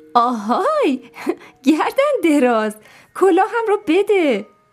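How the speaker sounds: amused, with a laugh. Narrator reads a character calling to a giraffe that took her hat, laughing.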